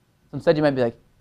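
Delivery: ordinary talk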